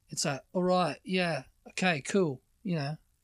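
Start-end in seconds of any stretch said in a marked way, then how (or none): 0.6-2.5 put-on slow multicultural London English accent. Showing the new london youth accent: multicultural london english accent. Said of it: "multicultural London English".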